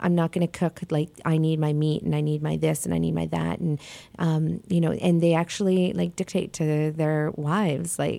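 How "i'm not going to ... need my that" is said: plain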